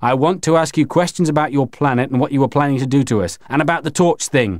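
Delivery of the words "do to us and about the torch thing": ordinary delivery, nothing marked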